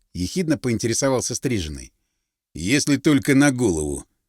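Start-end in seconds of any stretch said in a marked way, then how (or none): 2.6-4.1 calm, lower voice. Narrator reads the muscleman's reply to the cropped-haired man, calm. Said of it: "спокойно сказал".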